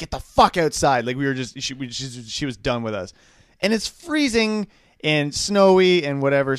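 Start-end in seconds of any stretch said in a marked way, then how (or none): 0.0-1.1 put-on fed-up, angry shouted yell. Retelling how her mom sent the kids outside, retelling mom's angry yell. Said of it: "so she's she's just pissed off".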